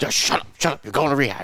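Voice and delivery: forceful, loud, aggressive, barked, no-nonsense delivery. Retelling a phone call with his high school wrestling coach, imitating aggressive talk. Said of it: "he talks real aggressive".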